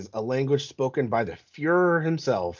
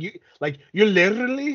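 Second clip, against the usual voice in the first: very high, exaggerated accent with rolled R's; 10 semitones higher, 4 dB louder than usual.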